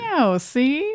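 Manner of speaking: high 1940s gangster voice. Speakers recalling Team Rocket's voices, one does Meowth: 1940s gangster voice. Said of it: "sounds like a nineteen forties gangster".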